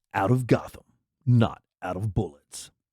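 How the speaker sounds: deep movie-trailer narrator delivery. Retrying a tagline after a first attempt, using a movie voice. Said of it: "Had to use my movie voice for that".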